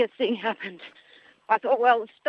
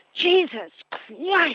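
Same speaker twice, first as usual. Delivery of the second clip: very loud, high, full-voiced yell at top volume; 7 semitones higher than usual. Retelling someone stopping in front of them during a run, retelling a shout. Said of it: "I said at the top of my voice".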